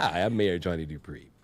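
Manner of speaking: big, very low voice, dropped way down. Introduce yourself as the mayor after practicing all day, in a Johnny Dupree big blow voice. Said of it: "I've been working on my big blow voice".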